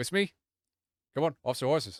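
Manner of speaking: high, shouted, commanding delivery. Narrating a game, a character shouts to the guards in Zemnian. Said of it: "sort of like shouts to the guards".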